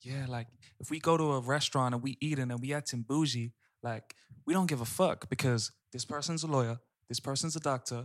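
put-on, imitated American accent. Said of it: "in her American accent".

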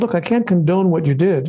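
ordinary delivery

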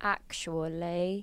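very hushed, slow, drawn-out British accent. Asked to say something in a british accent really slow, the speaker tries it. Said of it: "Say something in a British accent really slow".

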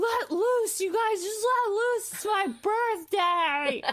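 mock very high, long stretched-out screaming. Retelling a woman leaning out a cab window at people, retelling someone screaming at people. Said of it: "screaming at people".

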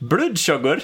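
Swedish-accented speech. Late in a discussion, repeating a study topic, Swedish accent. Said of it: "That's a Swedish accent for you".

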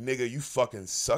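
imitated deep voice. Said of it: "But deep voice".

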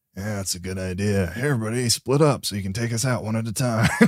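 whispered put-on character voice. Narrating a game scene, speaking as Sergeant Farrow to his group, whispering. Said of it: "As he whispers to his group".

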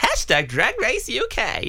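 high, slow, drawn-out announcer voice.

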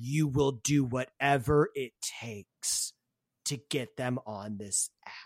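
voice suddenly dropping low and deep. Voicing the app's cheerful host as her voice drops: voice drops low. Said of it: "her voice, like, drops, she's like".

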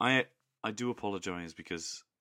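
ordinary delivery

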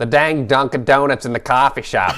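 attempted put-on Boston accent. Asked for a random line about coffee, the speaker tries a boston accent. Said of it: "do you want me to try my boston accent".

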